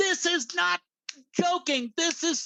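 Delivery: put-on, very high, stretched-out, drawn-out scream. Retelling a phone call to a sister during a tornado warning: retelling a scream. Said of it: "I'm screaming at her over the phone".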